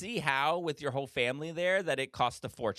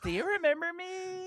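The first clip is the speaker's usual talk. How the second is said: mock tipsy voice, higher pitch. Acting out the other speaker approaching a server with wine: imitating a tipsy partner. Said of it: "Let me pretend that I have a glass of wine".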